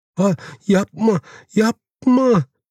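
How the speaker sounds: ludicrous, trembling voice. Someone being shaken by the Savage cries out: ludicrous, trembling voice. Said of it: "gülünç ve titrek hale gelen bir sesle".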